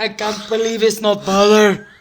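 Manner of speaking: put-on, laid-on Russian-sounding accent. Repeating the butter ad line as Fabio: Fabio impression, Russian-sounding. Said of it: "That was, like, Russian".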